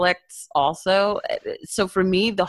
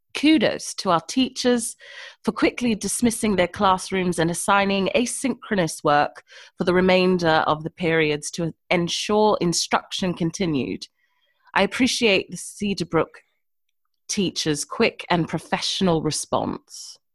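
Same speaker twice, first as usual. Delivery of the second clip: fake, mock British accent. Reading a school principal's email aloud on request, in a fake british accent. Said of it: "I'm curious what your fake British accent sounds like".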